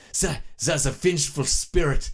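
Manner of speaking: best-effort fake German accent. Telling how the Nazis spoke of him as a legend: mock German accent. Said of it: "I gotta do my best German".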